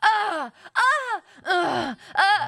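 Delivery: very slow, stretched, high drawn-out dying noises. Retelling recording death noises for a video game: imitating video game death noises. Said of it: "death noises".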